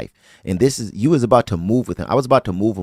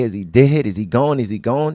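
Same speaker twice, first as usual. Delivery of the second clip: acted-out tearful, repeated questions through sobs; 4 semitones higher than usual. Retelling asking a relative in a police car, retelling own crying questions. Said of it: "I'm just pouring, crying".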